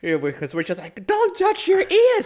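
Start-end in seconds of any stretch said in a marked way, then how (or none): 1.1-2.3 very loud, very shrill, high, frightened screaming. Retelling how the family reacted to Q-tips in ears: imitating people screaming. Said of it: "And we all started screaming".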